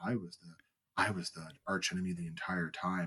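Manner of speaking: low, quiet evil monotone. Imagining Jar Jar emerging from the shadows as the archenemy, in Barry's evil monotone voice. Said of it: "with the Barry monotone voice of".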